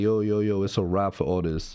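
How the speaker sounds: plain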